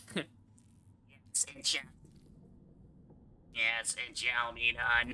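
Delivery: electrolarynx-style robotic voice. Voicing a character with an electrolarynx voice box: electrolarynx voice box voice. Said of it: "I'm just gonna start doing the voice box".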